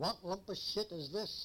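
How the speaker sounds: put-on broad American accent. Retelling what a man on the ship said over the bow, in a broad American accent. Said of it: "he said in a broad American voice".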